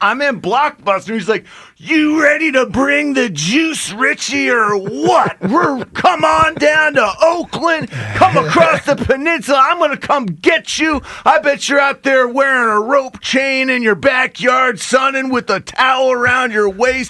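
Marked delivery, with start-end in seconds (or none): 1.8-17.1 wild, crazed football-coach voice, pitched high. Retelling a draft-day phone call from the coach: imitating Coach Gruden's crazy voice. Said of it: "that voice, that man, that craziness".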